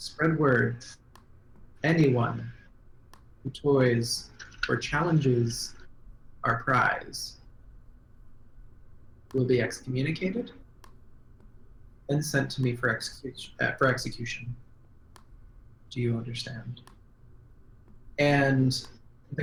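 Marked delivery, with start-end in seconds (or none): 0.0-16.8 soft, hushed whisper. Game master voices a woman whispering orders to the guard, whispering. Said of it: "She whispers to the guard".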